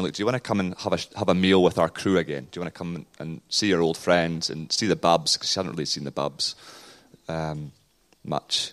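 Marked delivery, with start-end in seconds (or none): none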